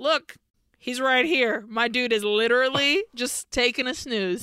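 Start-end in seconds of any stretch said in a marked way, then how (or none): none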